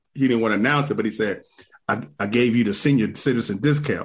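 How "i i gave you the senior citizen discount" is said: put-on whisper. Retelling what a counter worker quietly told him: imitating a whisper. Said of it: "he kinda whispered it".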